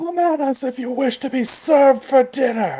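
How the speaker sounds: very high, full-lung bellowing shout. Shouting a threat at enemies as an arrow flies: shouting at the top of lungs. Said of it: "I'm going to shout at the top of my lungs".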